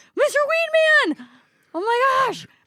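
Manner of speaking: very high, drawn-out panicked outcry. Retelling thinking someone was dead: imitating own panicked yell.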